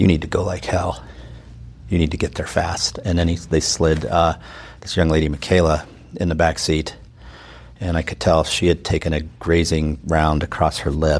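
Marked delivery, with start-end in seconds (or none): 0.0-3.0 very quiet, hushed, soft-spoken voice. Retelling what a firefighter said to you very quietly, in a very quiet voice. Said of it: "the firefighter said to me very quietly".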